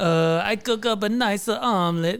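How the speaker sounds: high Italian chef voice. Improvising a chef character, answering what his specialty is, in an Italian accent. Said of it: "why did I do that Italian accent?".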